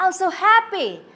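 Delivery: genuinely happy, excited, rising intonation. Teacher showing students how to imitate a speaker's tone, demonstrating a happy tone. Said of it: "try to imitate the tone of the speakers".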